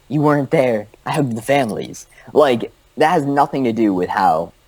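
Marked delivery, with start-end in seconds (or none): 0.1-2.0 heartfelt, earnest, emotional pleading tone. Mocking a debater's personal anecdote: imitating a politician's emotional appeal. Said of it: "He's going for emotional appeal".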